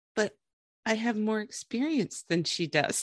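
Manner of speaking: very quiet, soft voice. Retelling what Ashley said after being refused: imitating Ashley speaking quietly. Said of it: "Ashley just very quietly".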